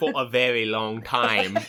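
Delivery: bad, fake British accent drifting toward Australian. Teased about a long-running bad British accent, the speaker repeats the phrase; bad British accent. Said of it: "That was like more Australian".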